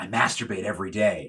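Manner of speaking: put-on whisper. Retelling a talk show guest's answer to the interviewer: imitating Ernest Borgnine whispering. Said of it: "he whispers to the".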